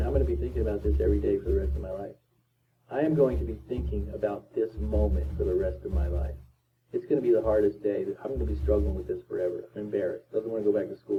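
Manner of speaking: usual speaking voice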